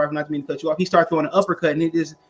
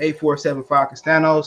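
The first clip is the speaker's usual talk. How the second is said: plain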